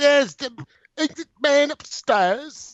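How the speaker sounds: very high-pitched, put-on English accent. Imitating a character who tries an English accent. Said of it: "trying to pull off the English accent".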